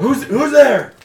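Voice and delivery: very high-pitched, very loud yell. Voicing someone inside a barred house as a dog barks: yelling from behind a door. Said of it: "you hear a voice, uh, yell".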